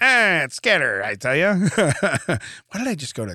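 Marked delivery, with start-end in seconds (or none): 0.0-1.5 clumsy, bad attempt at put-on gangster talk. In a casual chat, the speaker tries a gangster voice. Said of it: "try to do a gangster voice".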